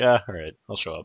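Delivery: put-on indifferent voice. Imitating a friend asked about the podcast at work: imitating Morgan not caring. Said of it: "You just don't even care".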